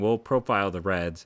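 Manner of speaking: ordinary talk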